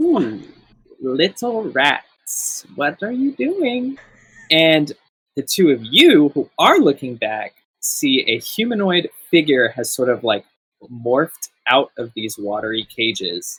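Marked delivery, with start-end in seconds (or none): 0.0-4.0 very high, mischievous, impish teasing voice. Narrating a game, a watery figure speaks behind the players in a mischievous voice. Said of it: "a sort of mischievous voice that says".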